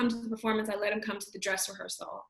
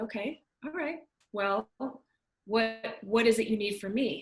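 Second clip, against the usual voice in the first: intimidating, solemn, grave fatherly voice. Retelling asking a man for audition help as he grows quiet: imitating a very quiet solemn reply. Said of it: "kind of got very quiet".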